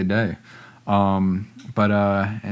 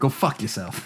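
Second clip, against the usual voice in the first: hushed, breathy, dismissive under-the-breath delivery; 4 semitones higher, 4 dB quieter than usual. Joking with listeners at the end of a podcast, show how to say it like Bill Burr. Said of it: "You got to say it like Bill Burr".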